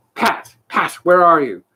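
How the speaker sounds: angry. Reading a story, narrator gives the rabbit's call for pat: angry. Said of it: "Next came an angry voice, the rabbit's".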